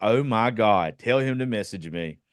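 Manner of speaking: normal talking voice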